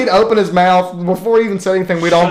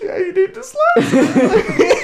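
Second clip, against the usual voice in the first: mock stifled laughing, higher; 13 semitones higher than usual. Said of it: "he's breaking down".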